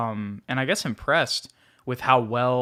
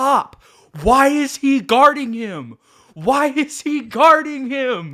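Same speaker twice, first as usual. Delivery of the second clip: very loud, shrill, high, drawn-out scream; 13 semitones higher, 9 dB louder than usual. Retelling a game, calling out to Pop from the stands: imitating own screaming. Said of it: "and I scream. I go".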